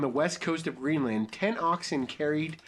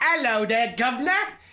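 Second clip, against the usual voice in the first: put-on cockney accent, raised and pitched up; 8 semitones higher, 6 dB louder than usual. Voicing a captain from a story someone wrote; cockney accent. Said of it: "He's pretty cockney".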